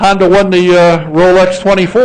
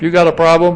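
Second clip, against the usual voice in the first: ordinary delivery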